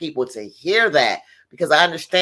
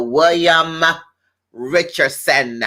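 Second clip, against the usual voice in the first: deliberate, slow, proud delivery. Giving a shout-out to a doctor, slow and proud. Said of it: "I'm going to say that slowly and proudly".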